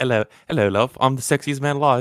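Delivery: put-on mock British accent. Asked to do it again, imitating a man's British accent. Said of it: "you gotta do that again".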